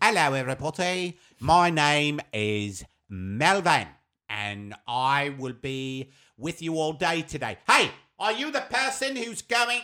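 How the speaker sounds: loud British accent, put on for show. Asked by the other host to do a little of the British accent. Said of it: "Do a little of your British accent".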